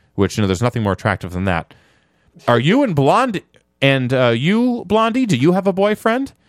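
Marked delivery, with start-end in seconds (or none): 2.5-6.3 giggling, giggly, high-pitched voice. Telling a story, quoting a waiter asking a blonde at the table: imitating a giggly waiter. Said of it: "the waiter asks in a giggly voice".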